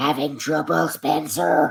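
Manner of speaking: rough, creaky, high-pitched rasping voice. Showing how a voice actor's Gordon voice sounds: imitating his Gordon voice. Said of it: "his Gordon voice is like".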